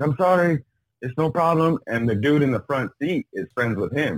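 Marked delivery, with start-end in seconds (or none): 0.0-1.8 halting broken English, pitched up. Speaker retells the man they hit apologizing as he gets in the car: broken english. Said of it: "fucking broken English".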